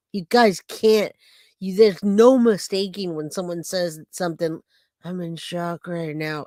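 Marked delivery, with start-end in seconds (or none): 5.0-6.4 mocking woman's whisper, much quieter. Speaker mocks a woman who whispers when lying, mocking Jennifer Soto's whisper.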